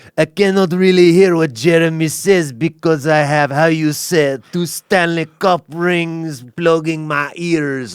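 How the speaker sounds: put-on obnoxious French-Canadian accent. Retelling what Patrick Roy said in an interview, Patrick Roy Quebecois accent. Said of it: "he did it in that douchey Quebecois accent".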